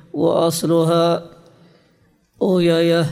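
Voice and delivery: plain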